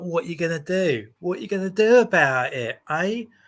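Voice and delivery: put-on brash, in-your-face southeast London accent. Describing how a certain woman confronts people, southeast london accent. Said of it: "southeast London accent".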